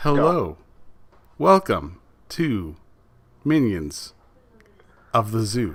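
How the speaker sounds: overly dramatic delivery with halting pauses. Opening the show one word at a time, with William Shatner-style dramatic pauses. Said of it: "don't Shatner it".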